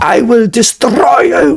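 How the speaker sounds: acted high-pitched, very loud furious bellow, rolled R. Show how people think Hitler normally talks, in a loud, angry Hitler voice with a rolling R. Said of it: "like this rolling R and this very loud, angry sounding voice".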